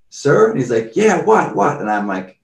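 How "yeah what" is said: acted-out angry man voice, much higher, louder. Retelling an angry man in a parking lot answering him, imitating a pissed-off man. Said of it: "got super pissed one time".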